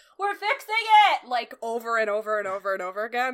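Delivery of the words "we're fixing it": very loud, very high computer narrator voice. Describing voice narration stuck on after a computer reset, imitating a loud computer narrator. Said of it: "this very loud voice being like".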